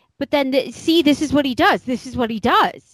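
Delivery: mock forceful delivery. Retelling what she said on the show: imitating a forceful voice. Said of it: "she's getting a little bit more forceful in her voice".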